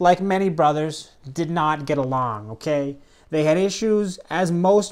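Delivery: ordinary delivery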